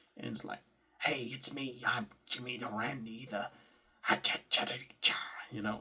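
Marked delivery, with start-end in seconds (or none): 1.0-5.2 put-on cartoon buzzard character voice. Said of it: "one of them sounded like [name]".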